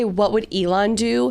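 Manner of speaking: normal talking voice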